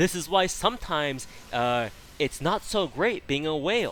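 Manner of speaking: laid-on sarcastic tone. Retelling something one said earlier: imitating own sarcastic remark. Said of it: "I say with obvious sarcasm".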